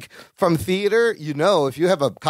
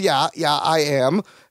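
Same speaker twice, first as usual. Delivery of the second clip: put-on stammer with slower pace. Recapping a scene where Carol questions Larry, imitating Larry's stammer. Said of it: "stammering and goes".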